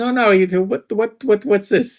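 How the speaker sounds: put-on Italian accent. Retelling what a man said, doing his thick Italian accent. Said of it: "had a really thick Italian accent".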